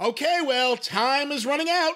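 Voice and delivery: put-on annoyed impatience, high and drawn out. Imitating the other speaker getting impatient before recording: imitating an annoyed voice. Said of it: "I can hear it in your voice when you get annoyed".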